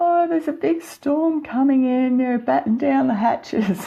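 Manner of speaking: tiny, very high, squeaky mouse voice. Recalling an early report given despite a fear of the microphone, squeaky little mouse voice. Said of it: "this squeaky little mouse voice going".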